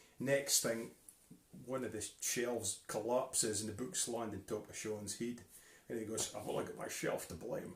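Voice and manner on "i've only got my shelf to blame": put-on almost whispered, breathy Scottish accent. Telling a story where books land on his head: Sean impression, Scottish accent. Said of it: "That's actually quite a good impression".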